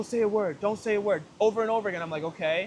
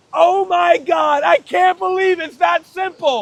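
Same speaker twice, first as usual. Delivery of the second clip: very high-pitched, very loud scream of delight; 9 semitones higher, 11 dB louder than usual. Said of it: "a moment where you're screaming".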